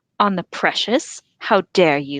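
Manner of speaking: severe, stern, reproachful voice. Narrator reads Frodo answering Smeagol's offer to swear, stern voice. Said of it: "his stern voice".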